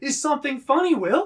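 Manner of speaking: very loud, very high shouting. Retelling how a teacher confronted a giggling student: imitating a teacher shouting. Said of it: "he shouts at me".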